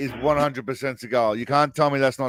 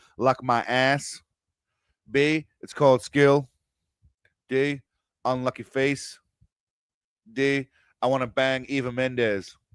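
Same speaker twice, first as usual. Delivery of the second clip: poor put-on American accent; 4 dB quieter than usual. Reading out the answer options from a film scene, in a bad american accent. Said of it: "My American accent sucks".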